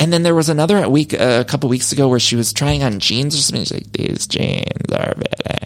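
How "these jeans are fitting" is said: put-on creaky vocal fry, slight. Imitating her while trying on jeans: creaky vocal fry. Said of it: "Just like a little vocal fry".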